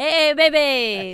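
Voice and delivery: put-on, hyped, over-the-top on-air radio DJ voice. Joining in on how hosts do not talk off air: put-on hyped radio dj voice. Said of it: "we don't do all that".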